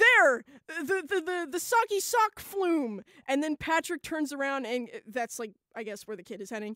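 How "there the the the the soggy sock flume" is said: very loud, high, swooping excited cry. Retelling a chase scene from a cartoon: imitating an excited exclamation. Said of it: "SpongeBob exclaims".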